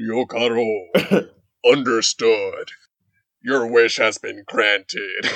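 deep summoned-dragon character voice. Retelling an anime scene where the dragon grants a wish, Shenlong dragon voice. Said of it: "Shenlong is just like".

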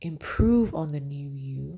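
plain

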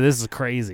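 ordinary talk

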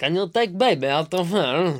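put-on high comic Eastern European accent. A speaker retells a film scene at the doctor's, doing a Borat impression. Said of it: "the Borat's going".

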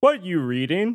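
big, booming, bumbling, clumsy voice. Narrating a scene, Brewer pokes his head through the doorway: Brewer's big booming, bumbling voice. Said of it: "Brewer's big kind of booming, bumbling voice say".

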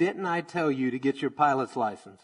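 ordinary talk

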